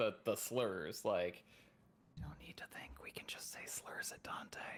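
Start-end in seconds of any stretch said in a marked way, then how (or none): 2.2-4.6 drops into a soft, breathy whisper. Speaking in character during a stealth check: whispering in character. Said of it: "Vale just drops into a whisper".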